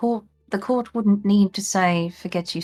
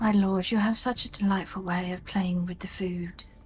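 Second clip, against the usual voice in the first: soft, murmured, muttered aside under the breath; 9 dB quieter than usual. Player speaking as Reza to Cypher, muttering under her breath. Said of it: "mutter under her breath".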